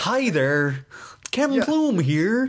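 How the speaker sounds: very high, slow, drawling frog-puppet voice. Saying a greeting with a name, as a Kermit impression. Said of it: "I just did my Kermit impression".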